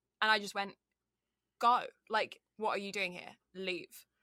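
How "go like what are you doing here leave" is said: fake English accent over Canadian accent. Retelling what was said to people who then ran, put-on English accent. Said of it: "it was like my Canadian just slipped off".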